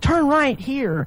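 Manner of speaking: high, slow, confident, authoritative doctor voice. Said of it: "in such a tone of voice".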